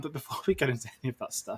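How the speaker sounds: words spoken through laughter. Starting the film review, laughing while talking. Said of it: "I'm laughing".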